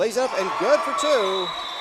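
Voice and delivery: loud, excited shouted call.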